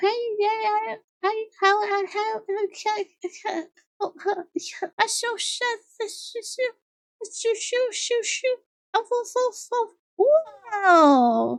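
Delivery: put-on gentle, soft, very slow baby voice. Retelling how she talked to them every single morning, in a gentle baby voice. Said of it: "She was specifically talking like this baby voice".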